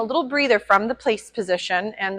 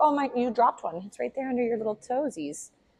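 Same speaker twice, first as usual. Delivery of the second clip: dog character voice; 6 dB quieter than usual. Training a dog and voicing what the dog is thinking: voicing the dog's thoughts. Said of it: "He's like".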